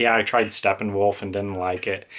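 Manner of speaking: ordinary delivery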